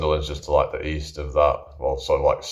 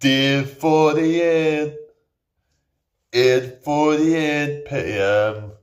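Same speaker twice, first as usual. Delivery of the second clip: put-on Newcastle accent, much higher and slower; 12 semitones higher, 5 dB louder than usual. Recalling the voice of the guy on Big Brother, in a Big Brother narrator voice. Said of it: "There was that guy on the Big Brother. Remember that voice? So it goes".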